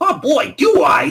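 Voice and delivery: put-on very high, very loud, belted Brooklyn accent. Retelling the story, Impmon answers the offer of power, in a Brooklyn accent. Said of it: "you're going to have to stop with that Brooklyn accent".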